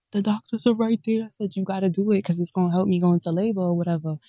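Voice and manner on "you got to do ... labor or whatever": whisper, much quieter. Woman recounting going into labor, repeating what she told him in the hospital, retelling her whisper. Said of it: "Why you whispering?".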